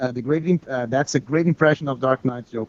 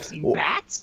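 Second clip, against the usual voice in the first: high-energy put-on cartoon voice, higher, quieter; 4 semitones higher, 5 dB quieter than usual. Comparing Joker impressions, doing Mark Hamill's Joker: Mark Hamill's Joker voice. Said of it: "it's more like".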